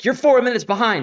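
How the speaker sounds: very loud, very high, shrill angry shouting. Retelling what a woman yelled at an event: imitating someone yelling. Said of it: "started yelling at me".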